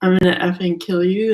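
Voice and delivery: put-on menacing voice. Retelling what someone said really close up: imitating a menacing threat. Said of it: "he said it like he was gonna do that".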